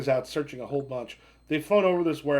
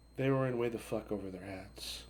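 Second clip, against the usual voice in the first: barely audible, low-voiced, very quiet whisper; 5 semitones lower, 12 dB quieter than usual. Voicing a character who speaks to another in the scene: whispering fairly low. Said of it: "whispers fairly low and goes".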